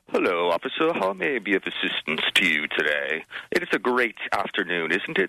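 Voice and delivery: light put-on, overly proper, vaguely English accent. Retelling talking to an officer after being pulled over, almost an English accent. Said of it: "almost like an English accent".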